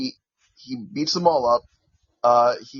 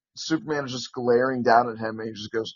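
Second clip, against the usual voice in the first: ordinary talk, nothing marked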